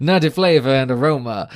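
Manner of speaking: put-on Louisiana accent, read aloud. Speaker reads a beer label aloud, in a Louisiana accent. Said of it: "I did Louisiana".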